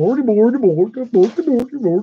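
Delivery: high babble. Joking about the chef from the Muppets: Swedish Chef voice. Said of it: "Talk about the chef from Muppets".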